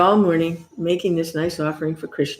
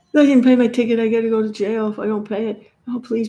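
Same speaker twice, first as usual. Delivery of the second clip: mock crying, much higher pitch; 5 semitones higher than usual. Retelling how a devotee came to him in a jam; imitating someone crying. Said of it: "And he's like crying".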